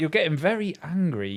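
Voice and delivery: play-acted chilled, calm, patronising, condescending tone. Retelling their answer to an angry man during a housework argument: retelling a condescending, chilled reply. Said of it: "replying really like condescendingly and like chilled".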